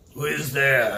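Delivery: very low, gruff voice. Game master voices someone calling out from a dungeon cell, gruff voice. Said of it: "you hear a gruff voice ask".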